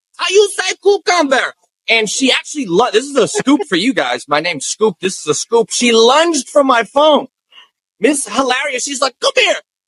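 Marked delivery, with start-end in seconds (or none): 0.2-1.6 fake Spanish accent with raised pitch.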